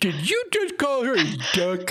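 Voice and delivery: very high, wild, swooping shriek. In a role-play scene, a character turns around and screams out a question, screaming. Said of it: "and screams".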